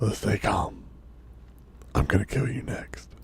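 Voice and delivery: very quiet, hushed whisper. Player character in a tabletop game speaking to the guy in front of him, whispering. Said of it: "As I whisper to the guy in front of me".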